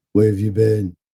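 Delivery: toneless, level, lifeless, dead monotone. Retelling a movie scene, quoting an actress's line: imitating Tara Reid's monotone. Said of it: "in the most monotone way".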